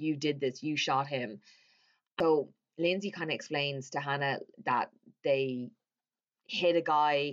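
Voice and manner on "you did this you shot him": ordinary delivery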